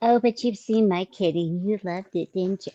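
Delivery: put-on babyish voice with creaky vocal fry. Retelling how a woman talked about sending a picture, imitating a woman's baby voice. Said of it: "It's that baby voice she does".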